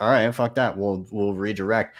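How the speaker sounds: usual speaking voice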